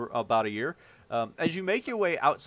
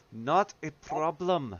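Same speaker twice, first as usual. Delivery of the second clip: strained politeness, words forced through clenched, gritted teeth. Griselda replies to the party thanking her, through gritted teeth. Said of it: "through gritted teeth".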